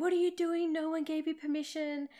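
high-pitched, hard yelling. Retelling how the speaker's dad yelled at the workmen, imitating the yell. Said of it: "he's yelling at the workmen saying".

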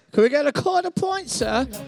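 put-on young boy voice. Voicing how he talks, asking for a quarter point, as a 1920s New York orphan boy. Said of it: "from early New York City".

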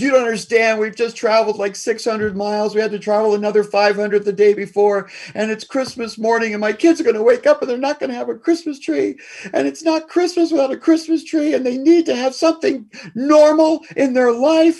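play-acted, very high, tearful sobbing breakdown. Telling a story, quoting mom pleading with the police on Christmas morning: imitating mom crying. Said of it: "she just breaks down crying".

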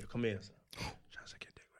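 put-on whispering. Acting out what a woman might say at a dinner table: imitating a whisper. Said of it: "Don't whisper in my ear".

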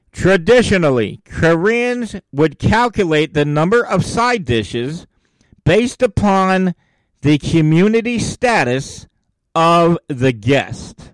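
slow, measured, deliberate, unhurried delivery. Podcast host who went too quick last week, now going slower. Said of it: "I'm going to go slower".

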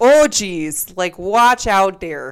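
loud, thick-on-purpose put-on Wisconsin accent. Showing the voice used earlier, in a Wisconsin accent. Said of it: "I was just using that like voice earlier".

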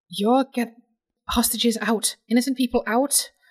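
called out, forced through clenched, gritted teeth. Player voicing a character ordering hostages out mid-fight, shouting through gritted teeth. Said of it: "through gritted teeth, is just going to shout out".

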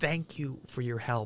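very quiet, hushed half-whisper under the breath. Retelling thanking someone on the phone before hanging up: retelling own half-whisper. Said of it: "I was like whispering".

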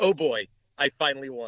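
usual speaking voice

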